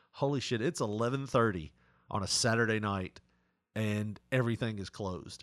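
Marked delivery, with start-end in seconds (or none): none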